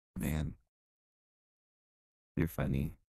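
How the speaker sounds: laid-on, flirty playboy voice. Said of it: "This is Fuckboy Midnight".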